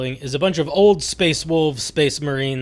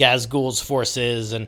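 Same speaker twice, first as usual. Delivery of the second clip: ordinary delivery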